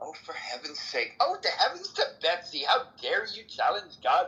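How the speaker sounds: put-on, airheaded, ditzy woman voice, swooping pitch. Mocking someone's argument about god, mock ditzy woman voice. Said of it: "Using a ditzy woman's voice".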